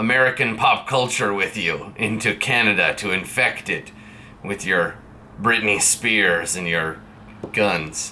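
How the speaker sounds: stern, authoritative, official-sounding voice. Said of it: "their job is to be very stern and authoritative".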